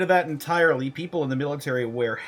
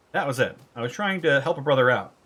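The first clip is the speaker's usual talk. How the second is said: ordinary talk, nothing marked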